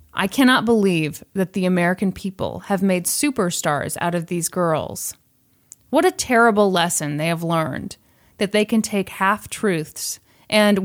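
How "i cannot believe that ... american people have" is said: usual speaking voice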